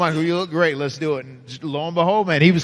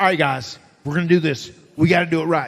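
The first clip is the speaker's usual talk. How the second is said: put-on Southern accent in a wrestler voice. Retelling what a wrestling partner said on the road: Michael Hayes half-ass accent. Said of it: "a Michael Hayes half-ass accent".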